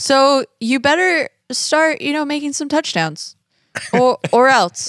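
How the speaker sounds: unthreatening mild voice. Imitating the phone caller from a movie scene: imitating a non-threatening voice. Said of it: "the least threatening voice on the phone".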